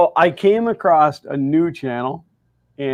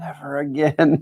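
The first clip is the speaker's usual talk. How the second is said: hushed half-whisper under the breath; 3 dB quieter than usual. Retelling what a man half-whispered on coming in after his stream: retelling a half-whisper. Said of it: "he whispers at me".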